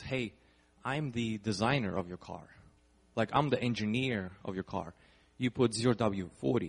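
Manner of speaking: ordinary talk, nothing marked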